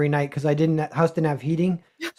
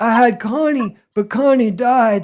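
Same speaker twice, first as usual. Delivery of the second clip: put-on old man voice, higher pitch; 6 semitones higher than usual. Retelling what a lonely old man at a booth said: impression of an old man. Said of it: "That's a great impression".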